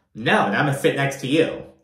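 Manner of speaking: usual speaking voice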